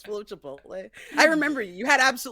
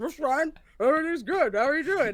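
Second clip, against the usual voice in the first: put-on full-mouth voice, pitched higher; 5 semitones higher than usual. Retelling meeting Matthew Lillard while he ate Chipotle, imitating him with a mouthful of beans. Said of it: "mouthful of beans".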